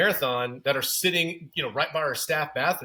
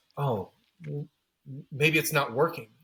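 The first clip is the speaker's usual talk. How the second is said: put-on muttering under the breath. Retelling what a woman said out of the corner of her mouth: imitating someone muttering under breath. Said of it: "out of the corner of her mouth under her breath goes".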